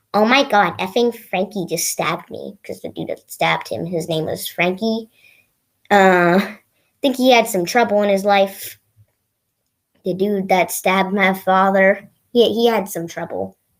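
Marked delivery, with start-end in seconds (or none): none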